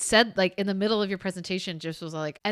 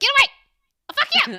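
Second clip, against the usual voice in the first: tiny cartoon chihuahua voice, very high, shrill, yappy yelling; 8 dB louder than usual. Describing old cartoons with a calm bulldog: imitating a little cartoon chihuahua. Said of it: "the chihuahua's all like".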